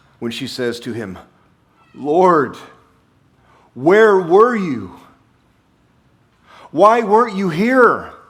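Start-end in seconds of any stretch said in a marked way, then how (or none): 1.9-8.1 put-on very loud, slow, drawn-out, aching, pained cry. Speaker retelling a woman's words to Jesus, imitating a pained voice. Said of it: "You can hear the pain in her voice".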